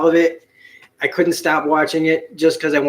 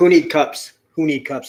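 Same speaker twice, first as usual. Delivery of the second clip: put-on caveman speech. Taking a drink from a giant orange soda, the speaker jokes: caveman voice. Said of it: "I sound like a caveman".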